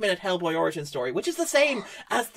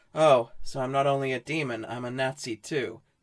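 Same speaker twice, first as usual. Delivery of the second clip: put-on bored, flat, monotone voice, lower pitch; 7 semitones lower, 4 dB quieter than usual. Retelling an actor's line reading in a film: imitating David Harbour's disinterested voice. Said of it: "in the most disinterested voice".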